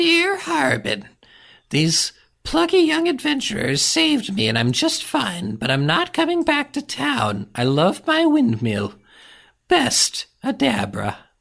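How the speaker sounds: very high-pitched character voice with swooping pitch. Reading a note from her aloud, Adabra's voice. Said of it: "I'll read it in her voice".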